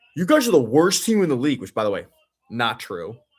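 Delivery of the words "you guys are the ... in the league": acted-out, pissed-off, angry taunting, raised and pitched up. Retelling a taunt from a player on the other team: imitating an angry opponent. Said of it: "he was all pissed off".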